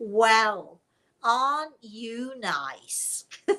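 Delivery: mock very slow drawl, dripping with sarcasm. Retell a woman's reply to your nice approach, imitating her very sarcastic voice. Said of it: "in a very sarcastic voice said to me".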